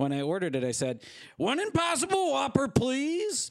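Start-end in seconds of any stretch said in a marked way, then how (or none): 1.4-3.5 very high, unrecognisable, disguised put-on voice. Retelling ordering at a drive-thru window: disguised voice. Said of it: "I disguised my voice".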